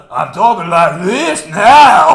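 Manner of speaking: very loud, slow, stretched put-on southern drawl. Imitating an actor's role in a film: imitating a southern drawl. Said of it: "he's adopted, like, a, uh, like, a southern kind of drawl".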